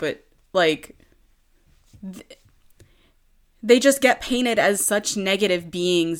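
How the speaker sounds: fighting off crying mid-sentence, tearful. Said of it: "i'm trying not to cry".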